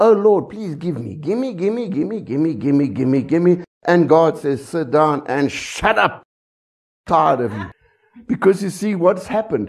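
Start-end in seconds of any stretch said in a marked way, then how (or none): 0.0-3.6 little beggar's repeated pleading, begging whine. Speaking to an audience, acting out someone praying to god: mock begging like a beggar. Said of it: "Then we become like a little beggar".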